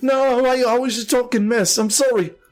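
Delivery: very high, frightened, terrified, pleading voice. Voicing a character backed against the wall, very scared. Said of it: "really, really, really scared".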